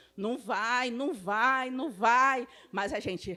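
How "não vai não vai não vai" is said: ordinary talk, nothing marked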